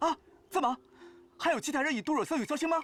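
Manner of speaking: loud startled shout of surprise. Asking if others also gave this flower, shouting in surprise. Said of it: "喊 什 么 喊 ？ 吓 我 一 跳".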